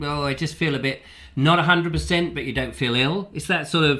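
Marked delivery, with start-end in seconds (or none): none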